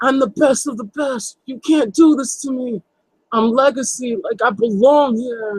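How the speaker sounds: high, mild, toned-down screamed words. Retelling what a man screamed at the top of his lungs: imitating someone screaming. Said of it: "screaming at him at the top of his lungs".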